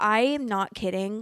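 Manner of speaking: ordinary talk, nothing marked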